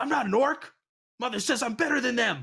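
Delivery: very high, loud, indignant, offended voice. Voicing a character who gets offended at a player: offended character voice. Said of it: "he gets all offended".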